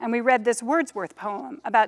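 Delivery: ordinary delivery, nothing marked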